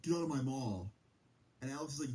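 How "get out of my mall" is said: mock yelling, much higher. Telling a story, the speaker acts out a mall security guard retelling a guard's yell. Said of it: "the guy yells back".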